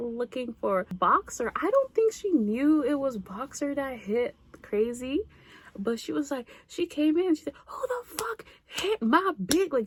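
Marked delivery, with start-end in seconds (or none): 7.7-9.7 put-on high, enraged, furious shouting. Retelling how an older sister burst in looking for someone: imitating an angry yell. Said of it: "she was so angry".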